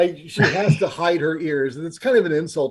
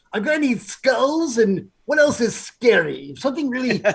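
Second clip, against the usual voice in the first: generic evil villain voice, higher pitch; 8 semitones higher than usual. Acting out an evil necromancer ordering a skull throne: evil character voice. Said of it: "my every evil character ki-, voice".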